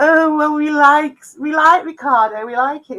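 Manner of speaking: smooth, creepy, creamy tone. Retelling what Evil Creeps said about Ricardo: creepy, creamy voice of Evil Creeps. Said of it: "the creepy, creamy voice of Evil Creeps going".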